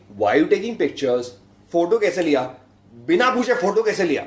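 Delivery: hostile, angry, accusing, charging-in tone. Retelling three men charging at him for taking a photo, retelling an accusatory demand. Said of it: "With this tone".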